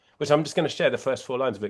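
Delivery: ordinary talk, nothing marked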